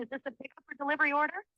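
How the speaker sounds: fast, rushed delivery. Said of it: "why are you talking so quickly".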